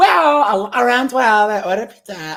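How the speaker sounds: woman's voice. Imitating a customer telling the manager her side of the story, in a Becky voice. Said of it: "now she's got the Becky voice".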